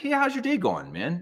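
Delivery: put-on friendly, genuinely interested tone, a bit high. Retelling a stranger's greeting in an elevator: imitating a friendly, genuinely interested greeting. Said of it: "the tone of his voice was so nice".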